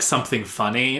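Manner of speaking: usual speaking voice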